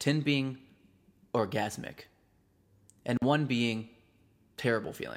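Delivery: seductive voice, brief pause before orgasmic tone. Demonstrating a seduction voice while asking a rating question: pause before orgasmic. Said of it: "as I pause before I say orgasmic".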